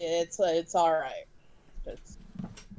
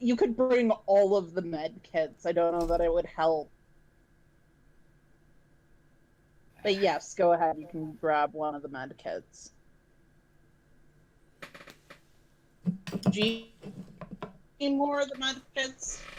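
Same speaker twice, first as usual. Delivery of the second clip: sarcastic, wisecracking, mock-generous smart-aleck tone. Answering a request to bring a med kit: smart-aleck tone. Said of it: "You being a smart ass".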